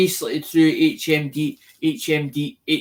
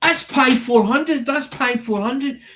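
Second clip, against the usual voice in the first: mock eager, excited called-out shout, pitched up; 9 semitones higher than usual. Retelling what they shouted when he showed them the unit, retelling a shout. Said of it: "and I'm shouting to him".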